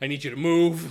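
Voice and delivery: high, very loud scream. Narrator voices one teenager screaming at another to move: screaming. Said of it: "Tiffany is just screaming at Aaron like".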